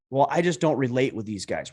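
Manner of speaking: ordinary talk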